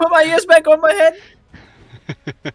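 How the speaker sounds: panicked screaming. Voicing a deafened character begging the healer for help: screaming in panic. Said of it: "he just begins screaming".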